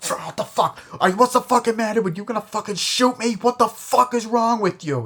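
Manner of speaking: high, loud, angry outburst.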